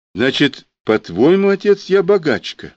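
bitter tone. A daughter answers her father during an argument; bitter. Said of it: "с горечью сказала Аленка".

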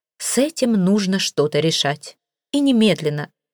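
ordinary delivery

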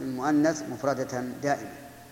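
ordinary delivery

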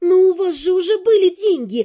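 high, loud exclamation. First-person narrator retorts to Dan after his reply, exclaiming. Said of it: "воскликнула я, ломая руки".

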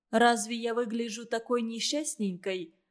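plain

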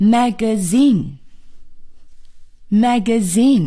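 magazine said slowly, weight on last syllable zine.

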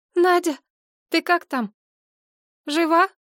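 high, trembling, quavering, shaky call-out. A woman stops and calls out to her friend, in a trembling voice. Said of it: "окликнула подругу дрожащим голосом".

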